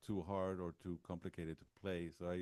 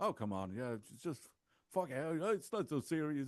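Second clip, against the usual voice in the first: put-on British accent, pitched up; 8 semitones higher, 4 dB louder than usual. Retelling what the producer said about drinking, imitating a British accent. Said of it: "it's like speaking with this fucking British accent".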